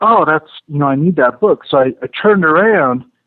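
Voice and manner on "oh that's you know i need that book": plain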